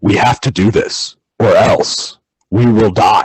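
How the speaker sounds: low, dead-serious, flat monotone drone. Imitate his default when he didn't know what emotion to have, a put-on low, utterly serious monotone. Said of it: "he just drops into this like low monotone".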